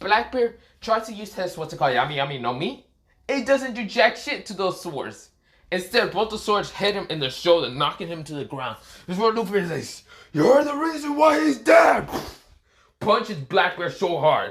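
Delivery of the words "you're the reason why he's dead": deep, raspy shouting voice. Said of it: "his voice is all raspy".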